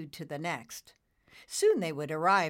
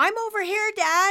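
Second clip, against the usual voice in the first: shrill, very loud, high shout; 9 dB louder than usual. A son calls out to his father, who leads an approaching army of clouds, yelling. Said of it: "Nimbus yelled".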